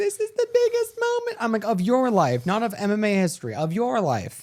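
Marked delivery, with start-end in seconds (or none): 0.0-1.4 mock very high, weepy, teary crying voice. Mocking Ronda Rousey's speech to a silent crowd: mock-crying Ronda Rousey impression. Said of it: "She's like crying. She's like".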